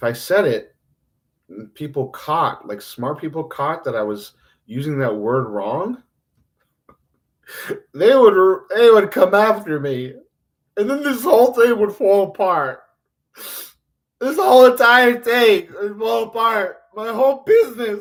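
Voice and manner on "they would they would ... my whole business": high, loud, fake laughing rant. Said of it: "That wasn't, that was fake".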